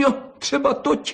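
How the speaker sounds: spiteful, sneering jeer, very high-pitched. The fox answers the badger's threat, spiteful and mocking. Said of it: "řekla jízlivě liška".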